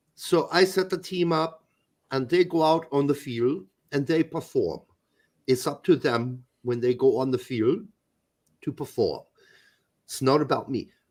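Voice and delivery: put-on low German-accented coach voice. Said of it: "Pete does a way better Klinsmann accent".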